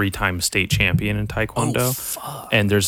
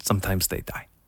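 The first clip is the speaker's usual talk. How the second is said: imitated Korean accent, much quieter; 6 dB quieter than usual. Retelling what someone's coach told him, in a Korean accent. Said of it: "In this Korean accent".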